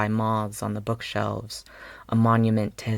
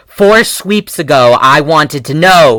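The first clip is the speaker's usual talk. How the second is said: very loud, furious, drawn-out angry snap; 5 semitones higher, 17 dB louder than usual. Reading fiction aloud, a character answers back after an apology: snapping angrily. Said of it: "he snaps".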